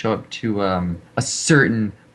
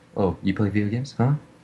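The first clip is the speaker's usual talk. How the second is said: mock sarcastic tone; 3 dB quieter than usual. Retelling how the other speaker's question sounded to them: imitating a sarcastic remark. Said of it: "I thought you were saying it sarcastically".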